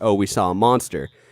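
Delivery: ordinary talk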